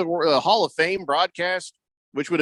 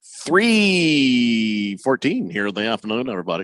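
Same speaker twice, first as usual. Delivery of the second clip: slow radio announcer voice, drawn-out "three"; 5 semitones lower than usual. Giving a time check to listeners: unusual morning radio voice. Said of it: "you did it in a voice I've never heard you use".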